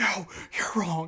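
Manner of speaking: high-pitched scream done in a whisper. Retelling an argument over an Uno game, imitating a whispered scream. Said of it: "screaming, but, like, whispering".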